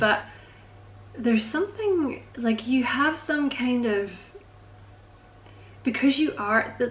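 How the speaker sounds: halting, stuttering stammer with repeated words and false starts. Describing the listener's confidence, stuttering. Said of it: "sorry I'm stuttering".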